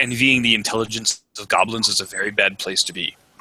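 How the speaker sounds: ordinary delivery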